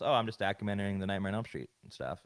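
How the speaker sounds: ordinary delivery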